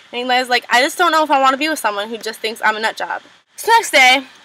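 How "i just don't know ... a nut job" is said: ordinary delivery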